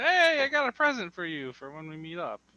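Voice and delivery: very loud, high, swooping yell. A character calls out to the approaching ghost, yelling. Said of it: "Kyle's gonna yell".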